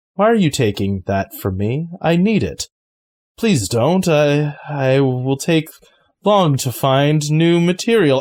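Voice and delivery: statue monster character voice. Voicing the statue creature as a character drags a figure away: voice of the statue creature. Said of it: "and that voice again goes".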